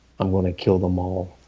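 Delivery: whispered line. Whispering into a fading character's ear as she dies: whisper. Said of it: "whisper in her ear".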